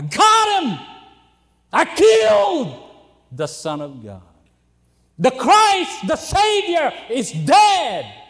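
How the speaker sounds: loud, swooping, gloating triumphant shout. Telling the crucifixion story, the speaker imagines Satan rejoicing, shouting in triumph. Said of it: "perhaps shouting".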